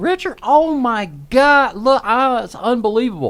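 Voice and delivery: mock very high, animated, thrilled, excited shouting. Retelling a woman running in waving her phone: imitating someone yelling excitedly. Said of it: "She's yelling".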